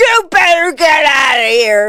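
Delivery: big, harsh yell. Retelling yelling at a bear heading toward her, biggest, harshest, very loud voice. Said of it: "use my biggest and harshest voice".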